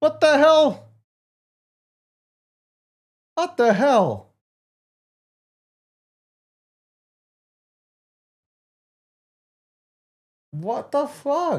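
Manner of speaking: high, angry, upset exclamations in an outburst. Unable to log in to Midnight City, the speaker rants: upset. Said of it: "I'm upset".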